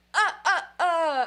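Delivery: booming, loud puppet vampire voice. Reading a character's stammer aloud: the Count voice. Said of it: "I can only read that as being the Count".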